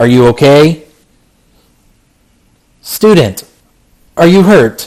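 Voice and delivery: robotic, machine-like voice. A strange figure with bird-like movements checks on a hurt student, robotic voice. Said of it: "You hear this robotic voice come out".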